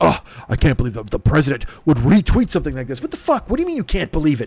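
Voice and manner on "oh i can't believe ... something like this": play-acted scandalised, indignant, outraged tone. Mocking everyone's reaction to the retweet: mock outraged voice.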